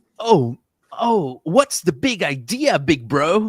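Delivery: overdone, super-emphatic, exaggerated anime-dub delivery. Describing anime dubbing actors who want to sound natural, demonstrates heavy exaggerated emphasis. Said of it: "like that, like super emphasis".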